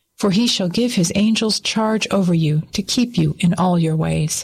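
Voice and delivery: ordinary delivery, nothing marked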